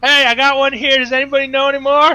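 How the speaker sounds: high, shrill, full-volume obnoxious scream. In a tabletop game, a player's character calls out, screaming at the top of their lungs. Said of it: "screaming at the top of my lungs".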